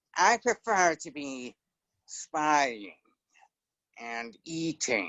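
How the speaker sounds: whiny rat voice with pitch swooping up and down. Recalling an impression that amused his daughter, doing Templeton the rat voice. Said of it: "Templeton, the rat".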